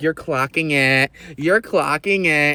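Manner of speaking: slow, mocking, patronizing, condescending taunt. Retelling how someone taunts with the speaker's own lingo: imitating someone mocking condescendingly. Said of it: "they're making fun of me and condescending".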